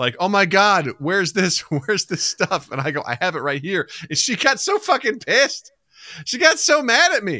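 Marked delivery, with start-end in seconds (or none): 0.2-2.7 play-acted, scared, panicky, frantic, freaked-out outburst. Retelling a woman freaking out over missing things; imitating someone freaking out. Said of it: "she started freaking out".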